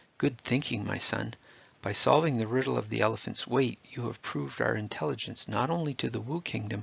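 ordinary delivery

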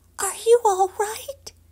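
high-pitched whisper. Poppy speaks to the fallen frog she has just picked up, whispering. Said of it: "She whispered".

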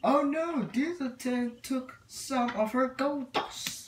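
very high, loud cartoon train engine voice. Doing requested engine voices one after another, Henry the engine voice. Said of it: "Henry lines".

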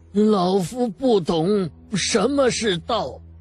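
high, quavering voice forced to sound steady. An old man, forcing himself calm after a voice echoes, answers in a trembling voice. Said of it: "颤声道".

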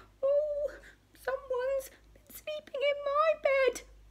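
tiny, very high-pitched cry. Narrator reading Baby Bear's line after the other bears speak, crying out. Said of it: "cried Baby Bear".

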